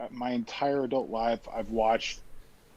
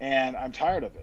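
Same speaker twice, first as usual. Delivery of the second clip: ordinary talk, nothing marked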